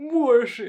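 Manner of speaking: overdone, very loud, high, theatrical adoring voice. Showing viewers how the speaker always pronounces one word, overly dramatic. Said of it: "So fucking dramatic for no reason".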